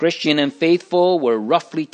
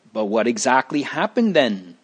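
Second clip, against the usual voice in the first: usual speaking voice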